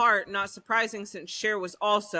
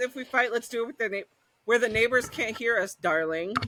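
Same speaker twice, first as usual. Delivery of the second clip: normal talking voice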